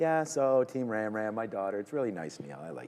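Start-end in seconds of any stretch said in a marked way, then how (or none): 0.0-1.8 slow, sugary, put-on sweet tone. Imitating Neil talking about his daughter: Neil's sweet voice. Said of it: "he always goes into a new voice".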